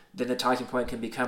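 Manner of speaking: plain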